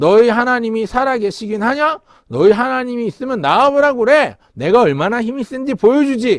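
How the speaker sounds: mocking giant voice, high and loud, jeering. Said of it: "이렇게 하나님을 욕되게 하는 걸".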